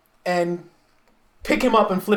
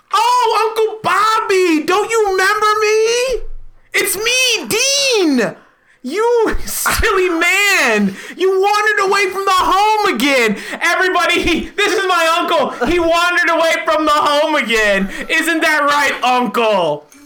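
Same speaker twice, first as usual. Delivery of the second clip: fake, put-on cheerful tone. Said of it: "so I'm going to say".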